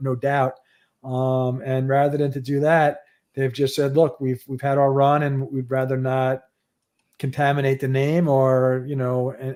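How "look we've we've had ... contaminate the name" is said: usual speaking voice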